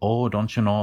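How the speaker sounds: exaggerated Minnesota accent. Showing the Minnesota stereotype with the tongue far back: Minnesota accent. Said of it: "that's part of the stereotype".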